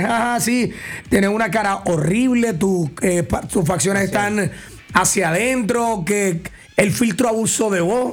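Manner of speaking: ordinary talk, nothing marked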